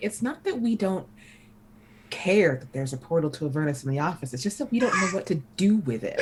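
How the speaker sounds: quiet muttering under the breath. Voicing Tahani walking up the stairs, muttering under her breath. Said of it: "under her breath".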